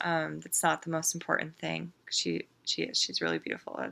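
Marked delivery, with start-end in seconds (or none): 2.1-3.8 very low voice, near tears. A speaker sharing her thoughts on body image, tearing up. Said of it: "That's why I'm tearing up".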